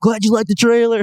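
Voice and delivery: very high, loud voice, bursting with excitement. Retelling a friend's text reply about the trailer: imitating an excited Chris Pratt. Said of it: "he's just really excited".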